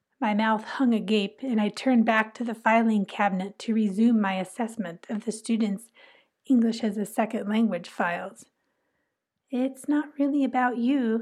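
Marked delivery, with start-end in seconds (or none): 9.5-11.2 kindly spoken tone. The other ESL teacher speaks to the narrator, in a kindly tone. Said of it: "the other ESL teacher said in a kindly tone".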